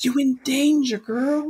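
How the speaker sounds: very high pitch, slow, drawn-out delivery. Doing the line from a movie scene: Whoopi Goldberg in Ghost voice. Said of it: "that thing Whoopi Goldberg does in, in Ghost".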